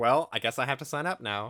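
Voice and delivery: ordinary talk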